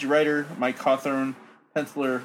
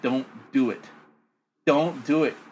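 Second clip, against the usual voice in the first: put-on crying, desperate and tearful, begging tone. Retelling a comic scene where a character begs: imitating someone crying. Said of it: "She's crying".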